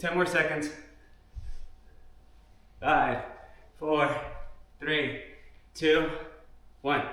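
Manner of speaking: breathless, winded, out of breath. Workout instructor counting down the last seconds of an exercise, out of breath. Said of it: "I'm already out of breath".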